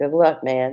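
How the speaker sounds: imitated resigned, given-up, defeated tone. Retelling what a man said after hearing his summary, retelling a resigned 'good luck'. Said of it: "in the voice of someone who had already given up".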